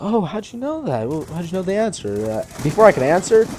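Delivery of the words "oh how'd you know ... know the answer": high, soft, surprised tone. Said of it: "she's like".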